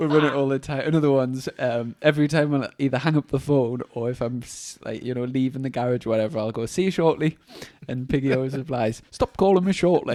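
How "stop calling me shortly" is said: put-on Yorkshire accent, raised and pitched up. Quoting Piggy's usual reply to him, in an attempted Yorkshire accent. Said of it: "Was that a Yorkshire accent you tried".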